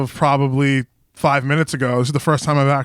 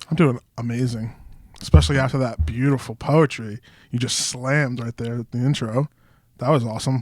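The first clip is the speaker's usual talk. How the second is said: sarcastic, tongue-in-cheek delivery; 2 semitones lower, 4 dB quieter than usual. Answering the host's question right after the intro: sarcastic praise. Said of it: "Is that sarcasm?".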